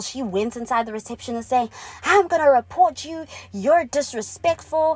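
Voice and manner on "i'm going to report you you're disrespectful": mock, enraged, pitched-up furious outburst. Retelling a woman who flew off the handle at reception: imitating a furious woman. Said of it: "she started flying off the handle".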